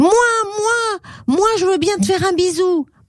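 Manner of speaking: very high, shrill shouting cry, moi stretched. Pixie calls to the crocodile from far away, shouting. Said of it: "Pixie criait".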